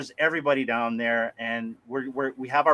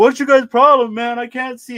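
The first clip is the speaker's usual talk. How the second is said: furious, very high, very loud angry yell; 10 semitones higher, 9 dB louder than usual. Retelling a late-night phone call, imitating a mad friend. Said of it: "And he was so mad".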